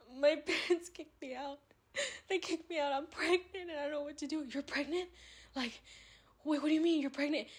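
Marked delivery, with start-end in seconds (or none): 0.2-4.5 put-on weepy, sobbing crying voice. Retelling her phone call to a guy, in a fake crying voice. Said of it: "And I'm like crying".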